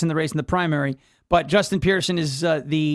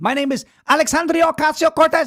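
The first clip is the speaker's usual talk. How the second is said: heavy fake Spanish accent, very high pitch; 11 semitones higher, 4 dB louder than usual. Imitating a politician introducing herself: AOC impression with fake Spanish accent. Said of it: "This is A O C".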